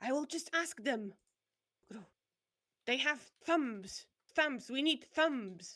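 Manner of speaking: strange, loud, gurgling talking-bird voice. Narrating a scene, the speaker voices a hidden voice behind the corner: weird gurgly voice. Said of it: "In a really weird sort of gurgly voice".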